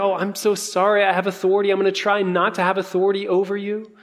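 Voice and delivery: fast, mock apologetic whine.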